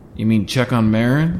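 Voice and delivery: loud, cheeky, playful teasing. [name] teases Drew, who says he'll go check on Jack; teasing. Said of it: "teased [name]".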